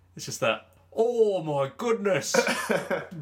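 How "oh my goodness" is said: high, slow, grating monotone commentator voice, British.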